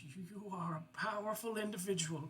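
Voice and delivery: soft, feeble, quavering, weak voice. Retelling what a woman said, imitating her trembling, weak voice. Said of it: "in a trembling, weak voice".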